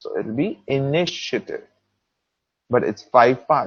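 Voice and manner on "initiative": initiative with stress on second syllable, ni. Pronunciation lesson counting word parts: stress on second syllable of initiative. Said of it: "it's on the second I".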